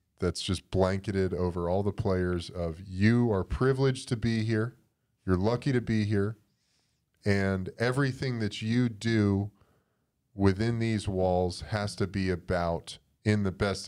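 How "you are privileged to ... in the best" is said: plain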